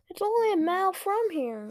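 high, earnest, pleading voice. A child in the back seat pleading with his parents. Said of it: "Luke pleaded".

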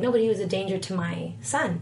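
plain

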